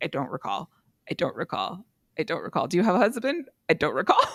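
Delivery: mechanical, repetitive, flat robotic monotone drone. Recapping a show, imitating a woman who answers every question like a robot. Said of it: "this woman sounds like a robot".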